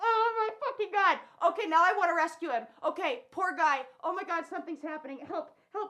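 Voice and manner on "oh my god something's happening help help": barely audible, on the verge of crying. Speaker watching him jump outside and wanting to rescue him: about to cry. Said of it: "I'm going to cry".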